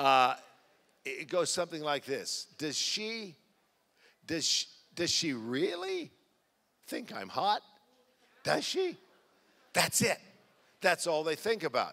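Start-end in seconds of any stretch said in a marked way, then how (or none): 2.6-9.0 put-on swooping, voice-cracking adolescent boy voice. A speaker telling the audience what fourteen-year-old boys think about, imitating a teen boy's cracking voice. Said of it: "as their voice is cracking".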